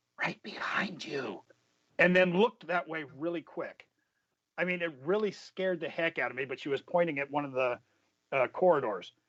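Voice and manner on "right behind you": hushed, secretive whisper, right in the ear. Retelling how a librarian answered a question: retelling a whisper. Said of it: "she whispers in my ear".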